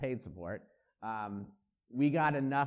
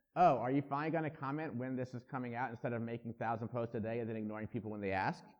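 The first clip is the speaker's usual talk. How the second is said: usual speaking voice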